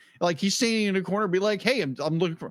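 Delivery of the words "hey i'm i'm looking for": quirky, cheeky put-on character voice. Retelling a scene where Jubei stands in a corner: quirky, cheeky Jubei voice. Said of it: "this kind of quirky, cheeky kind of thing".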